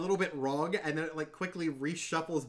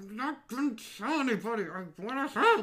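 high, smothered, muffled words behind a hand; 6 semitones higher than usual. A captive whose mouth is held by another player's character speaks, muffled through a hand. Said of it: "Through the hand, kind of goes".

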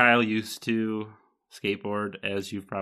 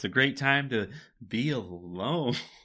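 play-acted slow, gloomy, unhappy-sounding delivery; 3 semitones higher than usual. Repeating the other speaker's line to tease them: imitating an unhappy tone. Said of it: "just the way you said it".

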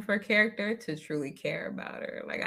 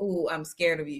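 ordinary delivery

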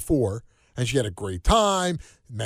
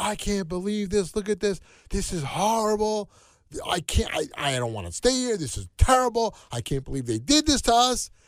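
pissed-off, fed-up angry rant, pitched higher; 7 semitones higher than usual. Retelling how she reacted to the campsite: imitating someone angry. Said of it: "she's so pissed off".

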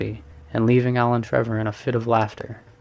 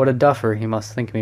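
plain

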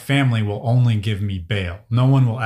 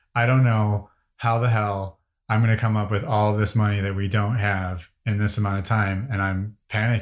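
ordinary talk, nothing marked

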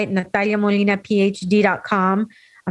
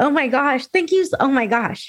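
choked with tears, teary and emotional; 5 semitones higher than usual. Responding to a co-speaker's closing words, not expecting them, teary-eyed. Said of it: "I'm getting teary-eyed".

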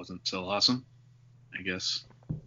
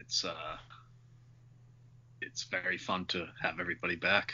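softly spoken, unenthusiastic, indifferent. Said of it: "You sound so pumped".

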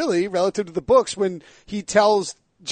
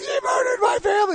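put-on very high, blubbering, bawling wail. Retelling a scene where Sam Tarley learns of the murders: imitating Sam Tarley bawling.

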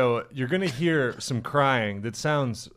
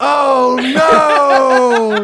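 mock turtle scream, higher and louder; 13 semitones higher, 14 dB louder than usual. Imitating the screaming turtle in a video: imitating a screaming turtle. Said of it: "the turtle just being like".

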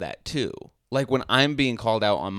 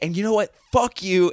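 pitched-up, angry ranting blow-up; 8 semitones higher, 4 dB louder than usual. Acting out someone going off angrily: imitating someone going off angrily. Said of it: "you're going off".

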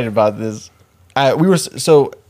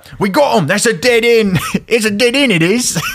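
put-on very high British accent, a bit Scottish; 11 semitones higher than usual. Narrating a story, voicing cops who reach a dead end: British accent, a bit Scottish. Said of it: "It might be a little bit too Scottish".

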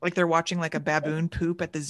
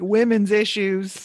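put-on Southern accent, louder; 3 semitones higher, 5 dB louder than usual. Imitating the other speaker backing away from the microphone: put-on southern accent. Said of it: "You have a Southern accent in my, in my little, um, cosplay of you".

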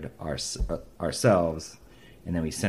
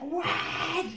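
very high, shrill, excited shriek; 3 dB quieter than usual. Retelling how a label woman reacted to learning his age: imitating a woman screaming.

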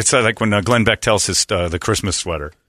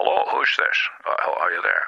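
sleepy put-on Scottish voice, lower and quieter; 4 semitones lower, 5 dB quieter than usual. Retelling a radio prank call, doing a sleepy Sean Connery impression. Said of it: "basically sleepy Sean Connery".

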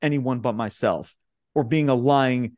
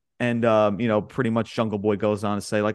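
ordinary talk

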